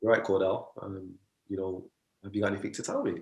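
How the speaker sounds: play-acted composed, calm, soft, even tone. Retelling his mum's words to him, imitating mum's calm tone. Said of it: "in a calm tone".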